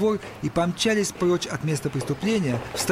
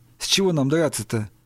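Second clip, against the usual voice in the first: usual speaking voice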